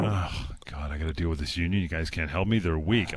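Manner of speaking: soft, low, deflated, defeated groan.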